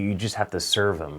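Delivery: ordinary talk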